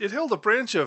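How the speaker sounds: plain reading voice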